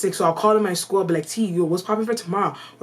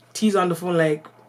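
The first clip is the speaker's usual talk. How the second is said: normal talking voice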